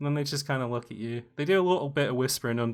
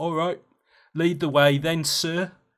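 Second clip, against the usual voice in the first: orc character voice with put-on human politeness; 2 semitones higher, 5 dB louder than usual. Voicing orcs who curtsy and tell the player to lead: voicing an orc. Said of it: "they do kinda like a fake human curtsy and it's like".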